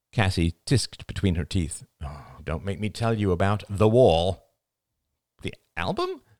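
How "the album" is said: very high, incredulous, disbelieving voice. A woman asks her friend a startled question back, incredulous. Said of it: "asked Rachel incredulously".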